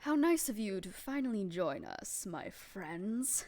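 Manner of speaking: echoing, reverberating voice. Narrator voices the sentient ooze speaking into the party's minds; voice echoing through minds. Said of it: "you hear the a voice just echo not through the room but through your minds".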